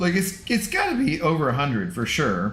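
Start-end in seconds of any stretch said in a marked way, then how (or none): 0.0-1.2 voice breaking, cracking mid-line. Speaker guessing aloud about Scotty's total, voice cracking. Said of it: "my voice cracked".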